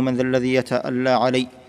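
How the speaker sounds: ordinary talk, nothing marked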